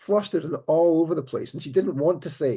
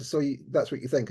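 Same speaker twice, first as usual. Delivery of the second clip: plain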